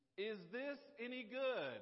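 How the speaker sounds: high, loud, slow, drawn-out yell.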